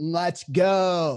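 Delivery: mock shouting. Retelling watching the game outside: retelling own shout. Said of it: "I was just shouting".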